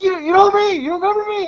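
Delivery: very high-pitched, shrill, loud hollering. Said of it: "and he's yelling".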